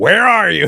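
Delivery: acted cross scolding. Finding the dog has messed on the rug, mock-angry scolding. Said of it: "like when I walk into the house and I see that the dog has messed on the rug".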